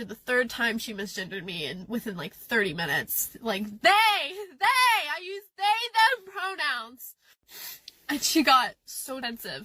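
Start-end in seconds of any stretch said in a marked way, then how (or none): 3.6-7.1 put-on fed-up, snapping, drawn-out, pitched-up yell. Retelling yelling at a coworker about pronouns: imitating own yelling. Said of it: "I ended up yelling at her".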